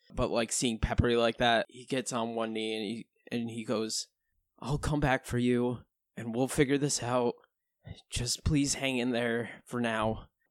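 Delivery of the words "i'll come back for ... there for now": quavering, shaky, trembling, unsteady voice. Narrating a scene where a character kneels and makes a promise, shaky voice. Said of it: "With his shaky voice".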